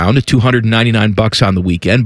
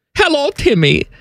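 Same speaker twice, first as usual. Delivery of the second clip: very high, put-on German accent. While going through golfers' names, the speaker says a greeting in a put-on German accent. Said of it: "Do you like my German accent?".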